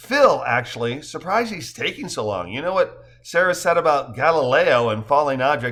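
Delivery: ordinary delivery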